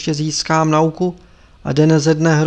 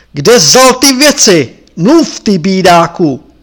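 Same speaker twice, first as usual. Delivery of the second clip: loud, bellowing, bull-like roar; 3 semitones higher, 8 dB louder than usual. The lama spots Tepaga hiding behind the guests and demands answers, roaring like a bull. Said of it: "zařval jako tur".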